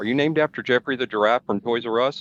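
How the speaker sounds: plain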